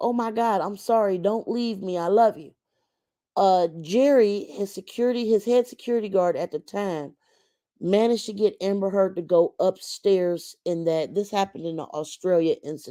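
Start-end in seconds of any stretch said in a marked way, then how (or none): 0.0-2.5 put-on crying voice. Retelling a recording of a fight: imitating someone crying and pleading. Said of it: "Amber is crying like".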